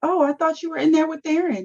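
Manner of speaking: put-on sweet, high, little voice with American accent. Retelling a woman's reply to a man asking why she didn't call, sweet little American voice. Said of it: "she in her little sweet little American voice".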